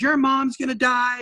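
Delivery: full-throated, acted-out yelling at top of lungs. Retelling what someone yelled at the top of their lungs: imitating someone yelling. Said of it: "yelling at the top of their lungs".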